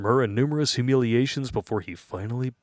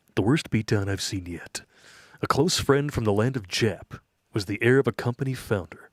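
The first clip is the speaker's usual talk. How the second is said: fake television narrator voice. Reading a viewer's submitted story aloud: Rod Serling voice. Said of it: "my Rod Serling voice here".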